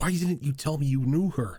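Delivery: loud hushed tone. Voicing a character pulling someone aside to speak: loud but hushed tone. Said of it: "loud but hushed tone".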